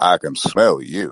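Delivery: deep mock overseer voice. Explaining which reference you thought he meant, in a Morgan Freeman overseer voice. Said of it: "the overseer voice".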